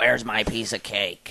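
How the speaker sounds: put-on mean robotic voice. Retelling what a party host's mother-in-law said, imitating a mean robotic voice. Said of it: "robotic voice like that".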